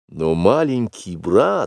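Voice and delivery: plain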